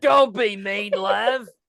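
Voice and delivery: loud mock Australian-British accent. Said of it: "are you British or Australian".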